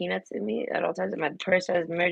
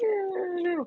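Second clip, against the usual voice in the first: put-on very high, tearful, whimpering crying voice; 13 semitones higher, 4 dB quieter than usual. Retelling her own reaction to a blood test: imitating her own whimpering. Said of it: "I started whimpering, crying, like".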